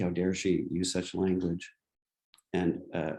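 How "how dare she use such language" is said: normal talking voice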